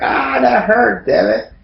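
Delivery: put-on slow, very high, creaky, rough pained wail. Asking whether a character screamed when slashed: imitating Haku screaming. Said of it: "Did he scream?".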